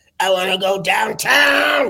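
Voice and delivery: manic, wired cartoon sailor voice. Showing a character from his act, Crack Guy, in a Popeye on crack voice. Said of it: "who's got Popeye on crack".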